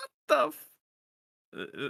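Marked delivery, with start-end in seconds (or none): 0.0-0.7 very high, squeaked-out little squeak. Voicing Siduri looking up at the creature: Siduri squeaking a little. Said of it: "sort of squeaks a little bit like".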